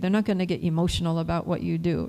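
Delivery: ordinary talk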